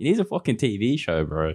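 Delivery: ordinary talk, nothing marked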